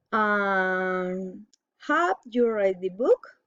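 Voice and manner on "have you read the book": pitch climbs at the end, rising on book. Teaching general questions, rising intonation on book. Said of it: "General question, rising intonation".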